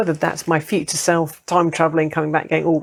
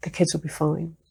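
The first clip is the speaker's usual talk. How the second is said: put-on tiny soft voice, quieter; 7 dB quieter than usual. Retelling an inner voice heard while deciding to leave: imitating a tiny quiet voice. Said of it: "tiny, quiet kind of "did I make it up" voice saying".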